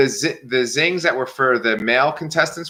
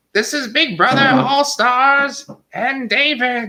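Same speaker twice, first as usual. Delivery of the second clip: squeaky, very high, slow, drawn-out announcer voice; 12 semitones higher than usual. Retelling a zing from the show in a Zing Bot voice. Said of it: "That's my Zing Bot voice".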